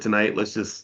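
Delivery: normal talking voice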